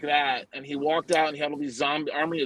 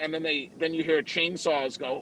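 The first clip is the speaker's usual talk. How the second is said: usual speaking voice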